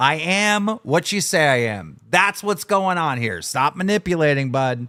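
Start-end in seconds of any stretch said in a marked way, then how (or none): 0.0-2.0 slow, biting, mocking sarcastic tone. Retelling own earlier reply to an accusation: retelling own sarcastic reply. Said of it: "sarcastically, I responded".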